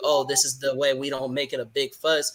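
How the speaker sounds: usual speaking voice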